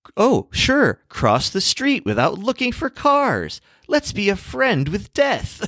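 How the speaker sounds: very high, sing-song, swooping sarcastic tone. Reading aloud a woman's written sarcastic remark, mock-sarcastic reading.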